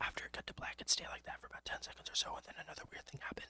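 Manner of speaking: rushed, speed-read, soft ASMR voice. Speaker reading a story aloud, switching to speed-reading in an asmr voice. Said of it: "It's gonna be a little bit weird in my A S M R voice".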